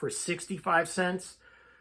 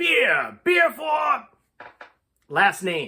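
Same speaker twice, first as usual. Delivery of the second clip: mock booming bellow, very loud, high and swooping; 9 semitones higher, 5 dB louder than usual. Recounting an old man interrupting everything, imitating his loudest voice. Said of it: "in his loudest voice".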